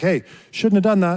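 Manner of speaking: polite, friendly voice. Speaker retelling what they told a man, putting on a polite voice. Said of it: "mentioned that to him in a polite way".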